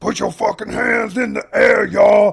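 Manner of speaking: high, loud, rough puppet-monster scream. Act out what he would do every thirty seconds during a track, screaming in a Grover voice. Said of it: "screaming in a Grover like Sesame Street voice".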